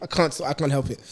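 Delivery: ordinary delivery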